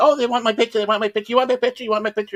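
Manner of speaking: mock very high, fast, over-eager excited gushing. Mocking a costumed attendee at a Star Wars event, mock-excited gushing. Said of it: "act all excited".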